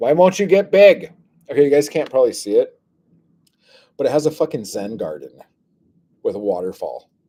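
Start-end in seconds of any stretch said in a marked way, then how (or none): 0.0-1.1 very high, very loud nagging. Urging something to get big, nagging like an old woman. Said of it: "I sound like a an old woman with her husband".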